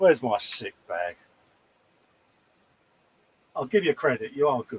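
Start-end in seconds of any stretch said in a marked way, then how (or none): none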